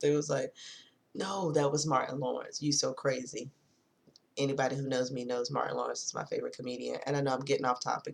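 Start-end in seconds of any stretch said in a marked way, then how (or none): none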